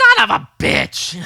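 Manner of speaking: shrill, very high, very loud, slow and drawn out. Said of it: "Gilbert Gottfried".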